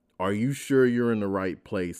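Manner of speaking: usual speaking voice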